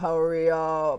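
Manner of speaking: very deep, bass-bottom, low character voice. Retelling how a talking blackboard from childhood spoke, in a really deep voice. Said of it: "in a really deep voice".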